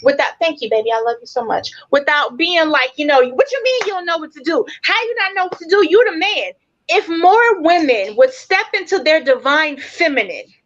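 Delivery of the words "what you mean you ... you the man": harping, hectoring, scolding, nagging voice. Acting out how a woman might scold her partner: imitating nagging and yelling. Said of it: "without yelling and screaming".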